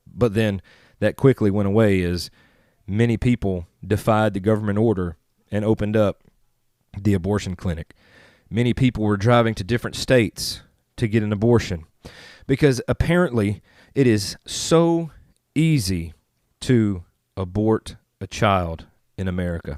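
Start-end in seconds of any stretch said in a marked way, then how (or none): none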